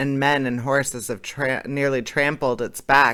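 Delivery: plain reading voice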